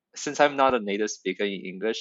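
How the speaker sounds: ordinary delivery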